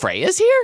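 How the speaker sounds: very high-pitched cartoonish voice. Reading a story aloud, a line spoken by Ella, Ella voice, high-pitched. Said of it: "You just sounded like a cartoon character".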